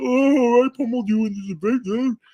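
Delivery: very high, mocking, drawn-out walrus voice. Retelling what a man was posting on Twitter after a debate, use a put-on walrus voice. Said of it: "I'm sorry if I use that voice".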